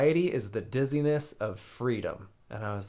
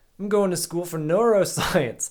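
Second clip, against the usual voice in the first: bad, raised, pitched-up fake New Zealand accent; 8 semitones higher, 7 dB louder than usual. Retelling picking up people at bars: imitating his past fake New Zealand accent. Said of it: "That's so bad".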